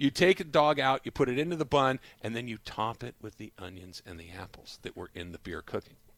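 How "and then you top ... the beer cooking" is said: hushed, very quiet, dropped-down voice. Describing how to top a grilled hot dog in a bun: voice dropped lower. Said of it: "your voice got lower so people didn't know".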